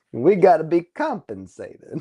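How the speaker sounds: bad put-on film noir gangster voice. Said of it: "toggling between film noir and a bad gangster accent".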